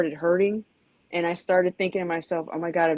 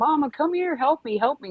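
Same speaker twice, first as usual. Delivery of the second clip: put-on desperate, high-pitched, urgent yell; 9 semitones higher than usual. Retelling how the speaker's mother, stung by a hornet, called for grandma, imitating mom yelling for help. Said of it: "she's yelling for my grandma".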